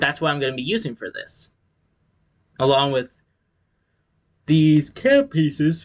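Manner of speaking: talking through a yawn. Describing the pieces for a Lego build to viewers, yawning. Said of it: "I'm yawning".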